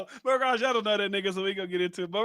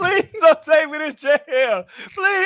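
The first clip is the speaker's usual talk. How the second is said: mock, high, drawn-out babyish crying through tears; 6 semitones higher, 8 dB louder than usual. Recounting being arrested for stealing a shirt, retelling crying like a baby. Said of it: "I was crying like a motherfucking baby".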